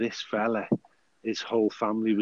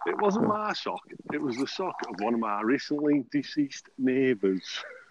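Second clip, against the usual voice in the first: put-on northern English accent throughout; 4 semitones higher, 4 dB quieter than usual. Continuing a joke about a sock, in a put-on northern accent. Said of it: "You don't have to talk like that".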